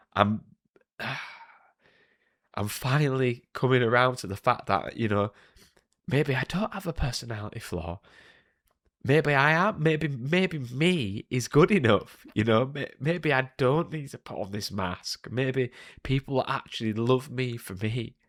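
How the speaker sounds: tearful, emotional voice, close to crying. Speaking to listeners about being good enough, getting emotional. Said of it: "getting emotional".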